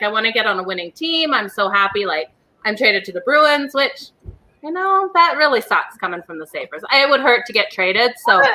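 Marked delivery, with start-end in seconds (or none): none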